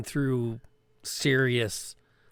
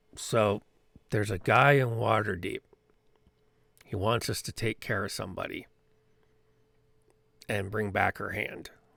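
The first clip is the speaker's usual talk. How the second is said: low, hushed, kept-down undertone; 3 semitones lower than usual. A game character speaks to Show and Jansen: low voice. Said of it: "that is said in a low voice".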